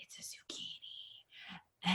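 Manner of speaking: soft, hushed whisper. Retelling what he whispered during a date: imitating a whisper. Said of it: "he whispered to me".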